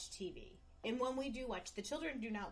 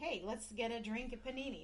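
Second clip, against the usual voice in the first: ordinary talk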